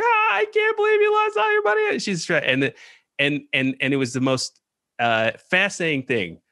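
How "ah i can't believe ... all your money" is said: mock weeping, much higher. Retelling the girlfriend's reaction at a carny's game, imitating someone weeping. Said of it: "She's just like weeping".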